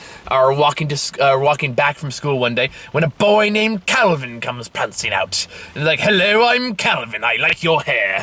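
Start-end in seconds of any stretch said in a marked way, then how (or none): 6.0-8.2 put-on British accent, laid on. Retelling a book's plot, voicing the boy Calvin introducing himself, in a put-on British accent. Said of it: "he's not British either, but I'm making this fun for myself".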